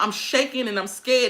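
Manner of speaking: ordinary delivery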